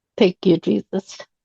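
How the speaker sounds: hushed voice. Retelling own words after a deep breath on the road: retelling a whisper. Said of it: "and I whispered".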